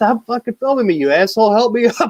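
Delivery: high-pitched yell. Retelling a friend who fell on skis while being filmed: imitating someone yelling. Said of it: "he's yelling at me".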